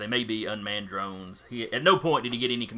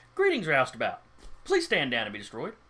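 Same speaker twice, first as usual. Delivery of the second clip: relatively pleasant-sounding voice, pitched higher; 3 semitones higher than usual. Voicing the response to a hail from the roustabout: relatively pleasant-sounding voice. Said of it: "In a relatively pleasant-sounding voice".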